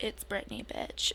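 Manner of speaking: seductive, sultry delivery. Podcast co-host reintroduces herself again, trying to sound sultry enough: sultry. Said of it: "you should say it again".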